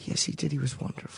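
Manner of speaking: gentle, sweet, breathy, hushed near-whisper. Answering a question while trying out a sweet voice: sweet Pooh voice. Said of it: "I was just trying my sweet voice".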